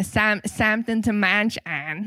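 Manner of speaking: put-on Midwestern Italian accent. Speaker quotes a line he wrote down, in a midwestern italian accent. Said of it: "It's like Midwestern Italian".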